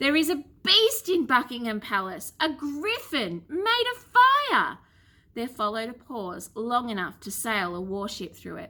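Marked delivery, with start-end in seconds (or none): 0.0-4.8 sudden, high, swooping words all blurted at once. Narrating, the boy takes a deep breath and tells Grammy his news: Alfred blurting it out. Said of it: "I'm now 12 years old. / Soaked to the skin and shivering with cold, / [name] realised it wasn't a monster at all. / I'm now 12 years old. / Soaked to the skin and shivering with cold".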